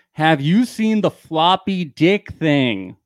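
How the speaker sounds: loud, drawn-out shouting. Acting out asking a translator about the show, yelling. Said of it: "I don't know why I have to yell".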